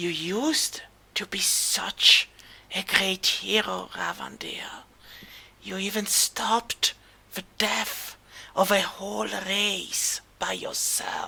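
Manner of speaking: icy, soft, cold whisper, very close to ear. Narrator voicing a mysterious whisper in a player character's ear: soft cold whisper. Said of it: "You hear a soft, cold whisper".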